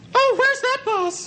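put-on weak, helpless girl voice, high and slow.

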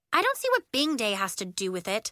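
ordinary delivery

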